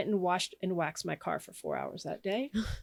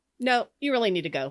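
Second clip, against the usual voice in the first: firm, stern, raised fatherly voice; 2 semitones higher, 5 dB louder than usual. Retelling the voice answering after I said I couldn't go, imitating a stern dad voice. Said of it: "Kind of like a stern dad kind of".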